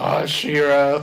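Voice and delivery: mock raspy smoker's voice. Imitating the magical unicorn from She-Ra: imitating a weird smoker's voice. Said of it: "he's got, like, a weird smoker's voice".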